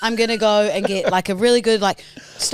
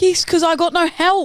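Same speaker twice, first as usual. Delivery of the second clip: raised, pitched-up, louder voice; 8 semitones higher, 3 dB louder than usual. Arguing with Mum about clothes left on the floor, in a raised voice. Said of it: "you're raising your voice".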